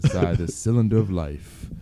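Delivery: very deep, low, weighty, profound commercial announcer voice. Saying something deep in an announcer voice: profound voiceover voice. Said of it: "when I use this voice right here".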